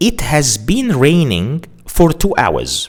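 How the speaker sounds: plain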